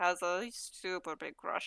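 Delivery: slow mutter under the breath. Telling the group a secret about another character: said under the breath.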